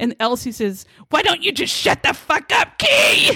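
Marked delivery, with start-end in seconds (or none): 1.1-3.3 play-acted, very high, shrill screaming outburst. Retelling an angry outburst in the car over snow: imitating someone screaming. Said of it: "he starts screaming at her".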